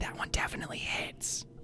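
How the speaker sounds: whispered voice. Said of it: "Why am I whispering?".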